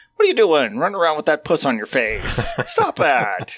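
scolding tone with swooping pitch. Retelling a comedian's bit where he talks like his mom: imitating a comedian's mom. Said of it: "he'd talk like his mom once in a while".

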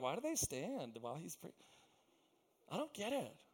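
put-on very quiet, hushed, reverent, pious voice.

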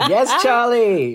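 mock horn-like cheer, high, slow, laughing.

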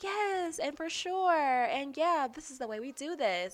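put-on high little girl voice.

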